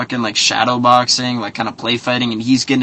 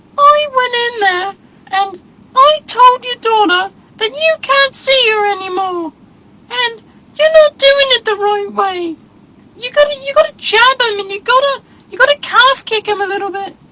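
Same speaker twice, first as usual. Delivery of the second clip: very high-pitched, squeaky put-on voice; 3 dB louder than usual. Imagining how a man would walk around talking, in a high-pitched squeaky voice. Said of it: "he's like that high-pitched, squeaky fucking voice".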